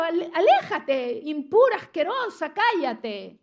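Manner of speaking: loud, contemptuous, scornful shouting. Imagining what the crowd yelled at the sick woman: imitating a scornful shout. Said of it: "deben haber gritado".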